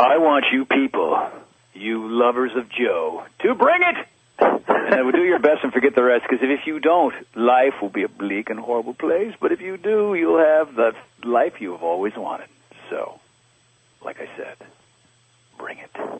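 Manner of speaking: hammed-up, loud, goofy, seductive voice. Guest records a closing message to listeners, the lovers of joe, in a mock seductive voice. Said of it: "in some sort of seductive voice".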